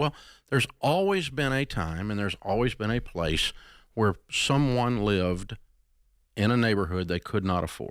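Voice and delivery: ordinary talk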